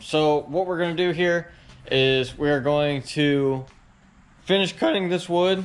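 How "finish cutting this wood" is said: voice cracking partway through the sentence. Mid-explanation, the speaker's voice suddenly cracks. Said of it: "that was bad voice crack".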